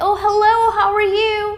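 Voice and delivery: overdone, excited, high, loud gushing voice.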